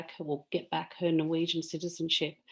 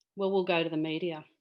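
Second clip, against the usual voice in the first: ordinary talk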